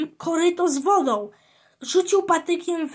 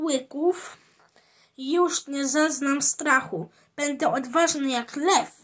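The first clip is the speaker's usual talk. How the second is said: plain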